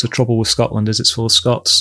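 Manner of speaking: normal talking voice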